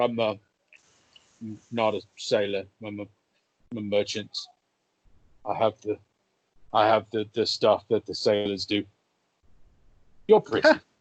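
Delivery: muffled, mushed talk through a full mouth. Acting out a man answering being called sailor, imitating talking with mouthful of eggs. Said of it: "he's got a, a mouthful of eggs".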